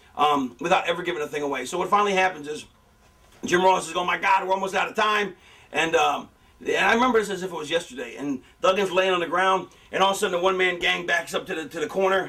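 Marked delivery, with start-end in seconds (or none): none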